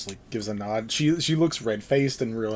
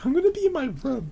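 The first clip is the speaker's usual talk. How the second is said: put-on very high, childish voice like a five-year-old; 3 dB louder than usual. Repeating own earlier in-character line: imitating a five-year-old. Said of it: "That sounded so five-year-old".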